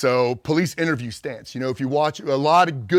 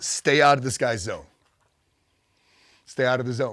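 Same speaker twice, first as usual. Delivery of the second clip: usual speaking voice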